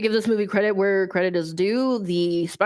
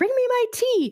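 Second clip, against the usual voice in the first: very high, shrieking, screaming voice. Retelling the movie scene where the queen wants her tea: imitating Drugora screaming. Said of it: "she's screaming".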